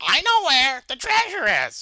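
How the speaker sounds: loud, high, swooping cartoon voice, pitch swinging wide. Keeping up a Squidward voice while playing: Squidward voice. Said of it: "gotta keep doing the Squidward voice".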